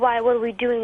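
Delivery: loud, really mean, hostile voice. Retelling a mother's reply through a closed door: imitating a really mean voice. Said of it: "in a really mean voice".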